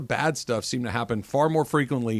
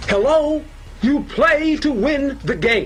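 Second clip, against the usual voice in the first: put-on fired-up football coach voice, higher and louder; 13 semitones higher, 5 dB louder than usual. Showing how another speaker has sounded all segment: Herm Edwards impression. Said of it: "I'll take Herm Edwards".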